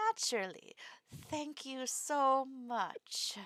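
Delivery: thin politeness, hidden anger. Narrating a character's polite reply, spoken through a tight smile. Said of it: "smiles in a very tight way".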